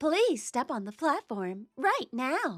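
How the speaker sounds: public-announcement style announcer voice. Showing the good announcing voice others have praised: announcer voice. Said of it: "I have a really good announcing voice".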